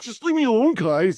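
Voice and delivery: very high-pitched, all worked up and agitated. Retelling a character's reaction to being teased: imitating someone getting worked up. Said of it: "He's just getting all worked up".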